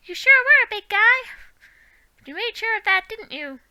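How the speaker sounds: high little fairy-creature pixie voice. Reading aloud, voicing the pixie questioning the knight who helped: pixie voice. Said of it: "I've got to do the voice for the pixie".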